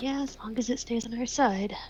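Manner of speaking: under the breath. Narrating a scene, the storyteller voices a woman's reply, muttered under her breath. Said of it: "She kind of says under her breath".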